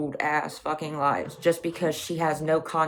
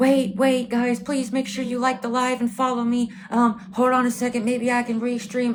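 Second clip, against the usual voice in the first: play-acted frantic, high, loud, panicked voice; 8 semitones higher, 5 dB louder than usual. A streamer retells another streamer's plea as viewers left her live: imitating a panicked plea.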